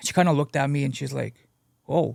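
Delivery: ordinary talk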